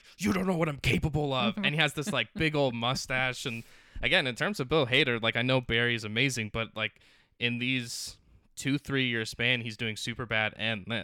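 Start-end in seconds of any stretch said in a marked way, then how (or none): 0.2-1.6 high, mild, acted threatening half-shout. Describing a scene where a chased man comes out with a bat, retelling a scream. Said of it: "he's screaming like".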